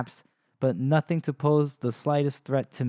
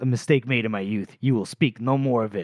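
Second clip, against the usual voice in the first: imitated angry tone; 2 semitones lower than usual. Retelling a book scene where a character gets angry: imitating an angry reply. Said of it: "he gets angry".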